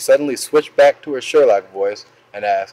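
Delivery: plain reading voice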